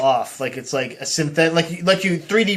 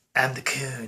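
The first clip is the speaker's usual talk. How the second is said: put-on cartoon kid voice, lower and quieter; 3 semitones lower, 8 dB quieter than usual. Doing a line as the cartoon character: Cartman voice. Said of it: "a Cartman impression".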